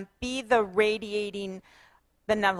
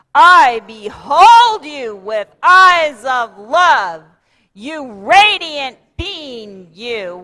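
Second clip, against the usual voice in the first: very loud, slow rock-and-roll shout; 3 semitones higher, 13 dB louder than usual. Leading an audience in a group affirmation, a rock and roll shout. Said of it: "One more time, really loud".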